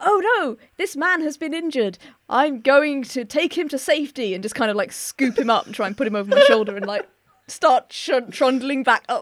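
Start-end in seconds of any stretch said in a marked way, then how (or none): 0.0-4.3 overly theatrical, very dramatic, heroic delivery. Voicing a character who runs over to an injured man, very dramatically. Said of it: "very dramatically go".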